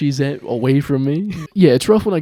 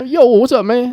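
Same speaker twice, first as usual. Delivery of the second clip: very high-pitched, loud speech switching speech styles; 9 semitones higher, 4 dB louder than usual.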